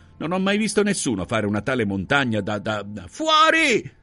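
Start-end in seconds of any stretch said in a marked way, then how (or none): 3.1-3.8 very high, frenzied, frantic yell. A woman ordering a guest and her child out of the house, frantic shout. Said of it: "gridò la merchi con frenesia".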